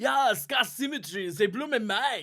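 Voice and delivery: put-on very loud, very high, shrill German-accented English. Recalling what a guy said after the show: german accent. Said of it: "but in his German accent".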